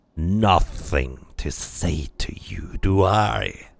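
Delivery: very slow, gravelly, snarling monster voice. A narrator voices the creature answering the questioner, in a snarling creature voice. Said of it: "The creature snarls".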